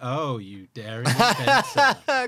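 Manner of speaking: very slow, loud, swooping, dripping sarcastic tone. Showing how the game master's line might have been meant: mock sarcastic reading. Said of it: "maybe it was supposed to be read like that".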